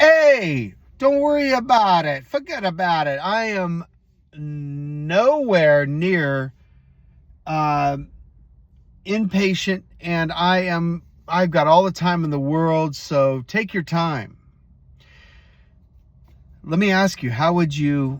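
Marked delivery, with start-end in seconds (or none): 0.0-14.4 easy, slow call with long drawn-out hey. Retelling what a man in the return line yelled at the rep: retelling a man's yell. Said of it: "he yells at the customer service rep".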